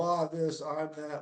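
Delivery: normal talking voice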